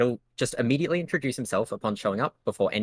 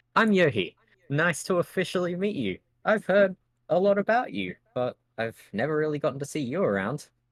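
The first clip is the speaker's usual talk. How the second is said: smug, self-pleased, pitched-up delivery; 6 semitones higher than usual. Voicing Yohi introducing himself to another character, really smug tone. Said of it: "introduce himself with like a really smug tone".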